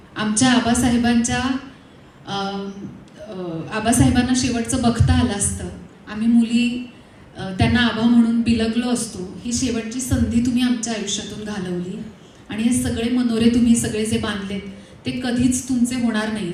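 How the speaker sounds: normal talking voice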